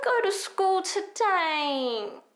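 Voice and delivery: put-on high whiny child voice, "today" drawn out. In a voice lesson on reaching head voice, imitating a whiny kid. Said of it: "pretend to speak like a whiny kid".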